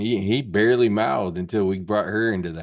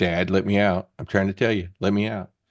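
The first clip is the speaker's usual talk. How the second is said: voice of a pet cat. Acting out how the cat asks to go out: voicing the cat asking out. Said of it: "he'll scratch the door like this. Like".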